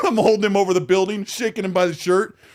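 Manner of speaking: ordinary delivery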